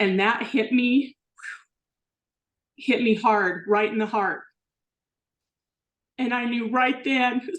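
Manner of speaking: tearful speech, crying while talking. Speaker describes a Bible verse that hit them hard, crying while talking. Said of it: "I didn't think I was going to cry on this".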